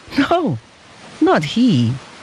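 happy laughing voice. A father answers a customs officer about his little son, with a happy laugh. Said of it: "answered the father with a happy laugh".

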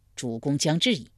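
ordinary delivery

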